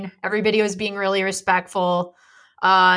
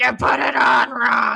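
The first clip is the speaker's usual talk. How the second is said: acted salty, slow, rough yelled-out scolding; 4 semitones higher than usual. Retelling how a woman at the booth corrected them, retelling a yell. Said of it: "Like yelled it at me".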